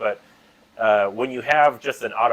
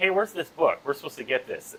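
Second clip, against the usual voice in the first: acted insistent, demanding, raised voice; 4 semitones higher, 5 dB quieter than usual. Retelling own earlier complaint: retelling own raised voice. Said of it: "I raised my voice and was like".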